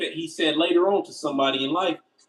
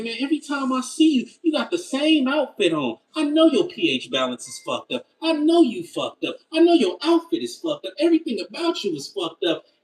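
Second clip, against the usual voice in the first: put-on, pitched-up, trash-talking roasting, piling it on; 8 semitones higher, 3 dB louder than usual. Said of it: "I remember roasting this young woman. And I said".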